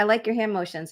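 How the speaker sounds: ordinary talk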